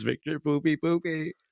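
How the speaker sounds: high-pitched talking-budgie voice. Retelling what the pet budgie says all afternoon: imitating a budgie talking. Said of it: "that's what he says".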